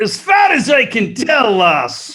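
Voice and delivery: put-on Scottish accent, pitched well up, slow. Performing a quick bit when asked to lead off: scottish impression. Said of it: "a little bit of a Scottish impression".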